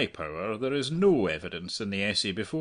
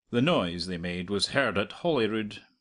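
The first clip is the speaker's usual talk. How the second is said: plain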